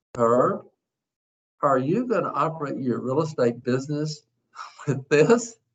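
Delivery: slow, unhurried, measured, drawn-out speech. Retelling what a man asked him after getting in his car, slow talking voice. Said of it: "he's in a slow talking voice".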